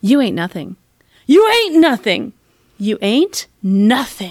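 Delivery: different readings, slowed down. Retelling how he rehearsed a line, saying it in different ways. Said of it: "he's just saying it in different ways".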